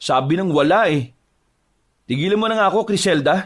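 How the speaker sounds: high-pitched, angry tone. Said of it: "bakit ganyan ka magsalita sa akin".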